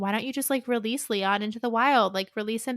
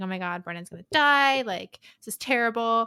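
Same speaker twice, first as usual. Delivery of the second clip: put-on panicked, frantic, fretting freaking-out rant. Retelling a power outage, the speaker is imitating someone freaking out. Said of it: "she's freaking out".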